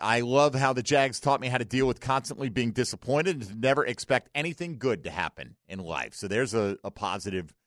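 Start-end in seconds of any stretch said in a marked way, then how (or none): none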